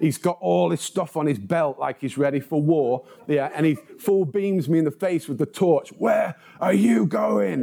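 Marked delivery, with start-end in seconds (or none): 5.9-7.6 put-on, gruff, raspy shout at top volume. Retelling being stopped by a security guard at night: imitating a shout. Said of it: "he shouted at the top of his voice".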